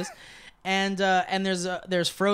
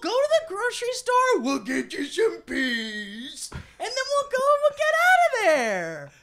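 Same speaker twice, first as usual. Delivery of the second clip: sing-song put-on voice, higher. Doing the impression again when asked: Lee impression, sing-song. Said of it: "Let's see if I can do it again".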